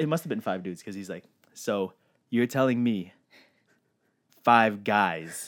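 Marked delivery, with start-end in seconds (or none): 1.5-5.5 put-on condescending man's tone, louder. Retelling what a man said about the trip: imitating a condescending man. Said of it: "this man, so condescending".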